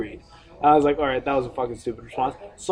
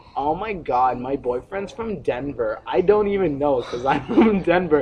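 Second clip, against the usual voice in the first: ordinary talk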